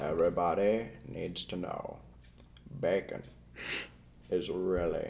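very hushed, deep, slow and soft delivery. Answering what to tell the world in thirty seconds: Morgan Freeman voice. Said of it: "use my Morgan Freeman voice".

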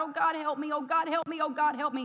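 acted-out sobbing, crying, pleading voice. Recounting being terrified while carrying a two-year-old, retelling a sobbing plea. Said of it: "and I'm sobbing, and I'm crying out to God".

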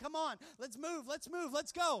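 keyed-up, eager, let's-go excitement. Acting out God eager for people to bring their needs: acting excited. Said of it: "He's excited".

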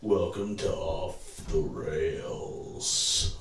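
very quiet, hushed, whispery spooky voice. Opening the show after a 3-2-1 countdown, in a spooky voice. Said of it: "Why'd you use your spook voice?".

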